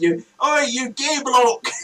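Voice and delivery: mock, loud, high-pitched shouting. Recalling a man hanging out an apartment window, retelling a shout out a window. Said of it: "he was shouting like".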